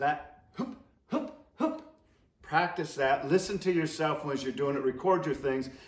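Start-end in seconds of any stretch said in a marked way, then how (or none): 0.0-1.8 quiet, aggressive honking goose hoop calls. Teaching goose calling, demonstrating the call for geese holding at fifty yards: aggressive goose call. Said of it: "stay onto that aggressive".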